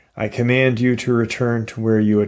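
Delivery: ordinary delivery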